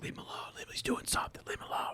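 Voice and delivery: soft, barely voiced whisper. Retelling how students react when he goes quiet: imitating students whispering. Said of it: "they start whispering".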